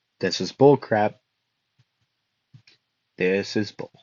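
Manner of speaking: low, soft deadpan delivery. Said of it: "like, deadpan".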